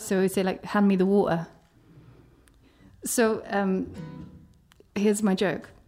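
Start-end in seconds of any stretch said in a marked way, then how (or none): 0.6-1.5 British accent, t's dropped as glottal stops. Showing how British people drop their T's: British accent dropping the T's. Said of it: "British people always drop the T's".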